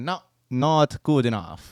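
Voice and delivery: slow, put-on Italian accent on English words. Retelling what Italians said to Meloni: imitating an Italian accent. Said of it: "They said it exactly in English with this accent".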